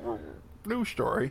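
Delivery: high-pitched frog puppet newscaster voice.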